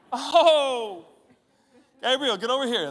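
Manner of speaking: very high calling voice, start stretched out. Acting out God looking at a business plan: voicing God. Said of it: "I think he goes something like this".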